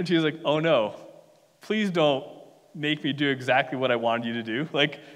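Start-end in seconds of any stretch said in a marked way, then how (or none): 0.4-4.4 put-on sarcastic tone. Retelling a queen's reply to the king's punishment: imitating a sarcastic plea.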